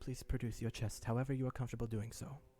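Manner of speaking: low, brought-down voice. A game character, not addressing the assembly, speaks aside in a lower voice. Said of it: "he says in a lower voice".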